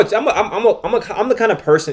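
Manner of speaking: stammering, repeated false starts. Speaker takes on the challenge of answering a question, stuttering. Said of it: "I'm stuttering now".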